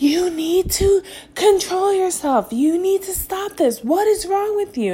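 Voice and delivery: very high, furious, angry shrieking scream. Parent recounting a struggle with their son, retelling screaming at him. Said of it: "I'm screaming at him like".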